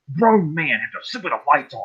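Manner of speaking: put-on irritated, self-disgusted scolding tone. Recalling flipping the lights on after the Grudge movie; retelling being mad at himself. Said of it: "I was mad at myself".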